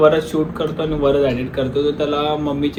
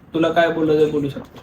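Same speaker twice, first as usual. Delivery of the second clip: ordinary delivery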